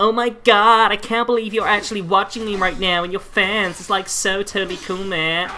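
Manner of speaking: really bad fake American accent, high, overeager, gushing. Mocking streamers who act like your best friend, in a bad American accent. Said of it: "That was a really bad version of like American accent".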